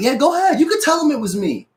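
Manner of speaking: quick, rattled-off, very high delivery. Retelling how a store worker answered a customer: imitating a quick reply. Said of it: "And he said it quick".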